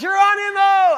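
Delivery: put-on shrill, very high, full-volume child's yell. Retelling a child leaping onto the bed: imitating a child yelling.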